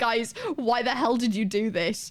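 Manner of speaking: imitated raging angry rant. Retelling a raging message to a group chat: imitating own angry message. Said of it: "the raging messages that I put in our group chat".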